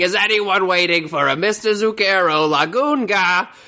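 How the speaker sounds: acted-out, persistent screaming, high and stretched. Retelling a boathouse man calling out for five minutes: imitating someone screaming.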